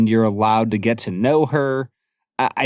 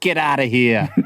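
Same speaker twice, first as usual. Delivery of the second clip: put-on speaking in a Boston accent. Recounting a movie scene, the priest's sister at the door, Boston accent. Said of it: "It's a great Boston accent".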